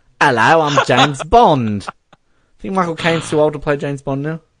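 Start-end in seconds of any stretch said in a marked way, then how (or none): 0.2-1.9 slow, relaxed, drawn-out Cockney geezer voice. Picturing a Cockney Bond, like Michael Caine: Michael Caine voice. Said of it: "he's speaking like a Cockney geezer, Cockney Bond, like Michael Caine".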